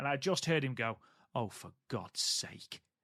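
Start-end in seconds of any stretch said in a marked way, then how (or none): 1.3-2.8 slow, whispered, dour sarcasm. Retelling a brother's reaction to a film scene: imitating a dour, sarcastic brother. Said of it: "one of the most dour, sarcastic people".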